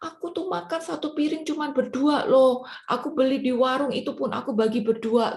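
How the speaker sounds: high-pitched, tearful, self-pitying.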